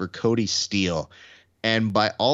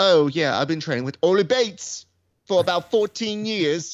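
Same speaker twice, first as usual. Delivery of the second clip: very high, put-on Cockney accent; 9 semitones higher, 3 dB louder than usual. Imitating someone naming a training partner: imitating a Cockney accent. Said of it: "that Cockney accent".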